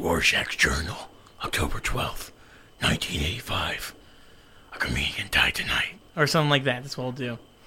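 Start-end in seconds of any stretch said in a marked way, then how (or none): 0.0-5.9 breathy, whispered delivery. Imitating Rorschach reading from his journal: Rorschach voice. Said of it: "he'll be like".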